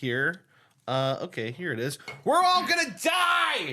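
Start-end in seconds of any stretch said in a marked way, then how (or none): 2.2-3.7 very high, panicked screaming. Sharing an asteroid news story with another speaker: mock panicked screaming. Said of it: "screaming at the heavens".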